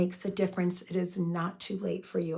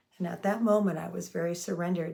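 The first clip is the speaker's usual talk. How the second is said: ordinary talk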